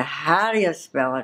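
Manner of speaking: ordinary talk, nothing marked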